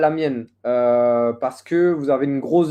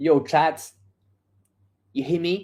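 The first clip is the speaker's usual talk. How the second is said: clumsy, bad fake American accent; 4 dB quieter than usual. A streamer checking whether chat can hear, doing a bad HasanAbi impression. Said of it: "faire l'accent américain".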